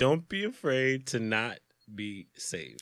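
drawn out, super slow, deliberate, word by word. Repeating a confusing phrase to pick it apart: saying it super slow. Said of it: "I had to say it super slow to pick it apart".

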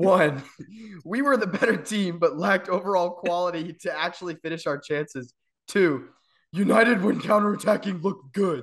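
put-on high-pitched caveman voice. Reading out someone's match notes to the co-hosts, caveman voice. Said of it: "That's the one that was so caveman-y".

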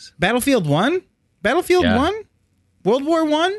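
put-on very high voice with climbing pitch. Hearing someone played battlefield 1, asking back in a very high voice. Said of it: "My voice can't get much higher than this".

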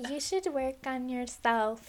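put-on American accent. Retelling own advice given at ten years old: American accent, imitating past self. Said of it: "I don't know why I had an American accent".

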